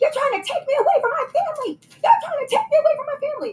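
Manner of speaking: very high, repeated shrieking and screaming. Retelling what a man yelled while attacking someone: imitating someone screaming.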